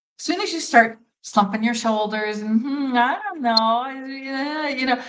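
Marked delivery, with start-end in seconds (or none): 2.6-4.7 slow, hesitant unsure voice, drawn out. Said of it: "then you don't sound confident".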